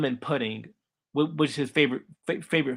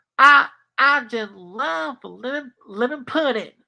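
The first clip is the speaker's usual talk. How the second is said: put-on Southern country accent, higher and louder; 10 semitones higher, 6 dB louder than usual. Describing a cartoon kid and imitating his lines: Southern country accent. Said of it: "that's his accent".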